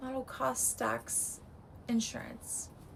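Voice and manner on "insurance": voice giving out, barely voiced. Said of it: "my voice is really giving out".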